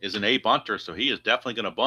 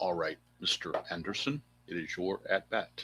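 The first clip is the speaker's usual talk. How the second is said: put-on menacing agent voice; 3 semitones lower, 10 dB quieter than usual. Calling a tabletop baseball game, addressing the batter Mister Anderson: Agent Smith voice from The Matrix. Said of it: "use my Matrix voice for Mister Anderson, my agent voice".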